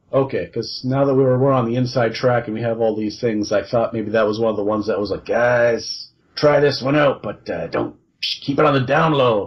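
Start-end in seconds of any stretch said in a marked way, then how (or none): 5.2-9.5 slow, sketchy, shady Brooklyn hustler voice. Talking with a co-host about a released item, imitating Community Pat. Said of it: "Like a kind of like a sketchy guy from Brooklyn who sells watches out of a trench coat".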